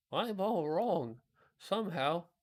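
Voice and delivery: feeble, strengthless, weak, high, slow voice. Reading a story aloud, the wet scarecrow answers: weak voice. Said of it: "he said in a weak voice".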